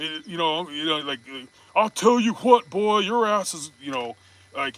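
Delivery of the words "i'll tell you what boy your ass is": put-on Texan dad voice, pitched higher. Acting out an angry dad at the bedroom door: Hank Hill voice. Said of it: "You bust a Hank Hill".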